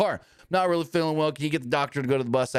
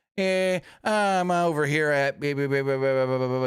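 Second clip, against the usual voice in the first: very slow, unbothered, pitched up, no urgency. Retelling a nine one one call, imitating a caller with no urgency. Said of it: "the guy with no sense of urgency in his voice at all was like".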